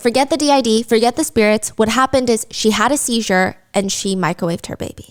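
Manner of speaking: ordinary delivery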